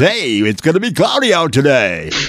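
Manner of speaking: high, swooping jock-bro weatherman delivery. Mocking a new TV weatherman's forecast delivery: jock-boy weatherman voice. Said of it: "he does the jock boys".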